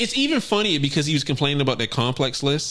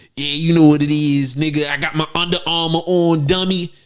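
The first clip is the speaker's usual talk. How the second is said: put-on Baltimore voice. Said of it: "I would put on the voice of Baltimore".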